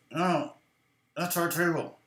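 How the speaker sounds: slow speech forced through a shut, clenched jaw. Retelling Scott answering a security guard: imitating Scott's wired-jaw talk. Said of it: "his mouth is wired shut".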